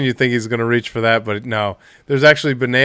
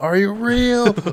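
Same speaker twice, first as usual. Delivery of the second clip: mock, very high-pitched shouted yell; 10 semitones higher than usual. Retelling a movie scene, imitating Will Smith yelling at the sound guy. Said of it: "Will Smith is yelling at him like".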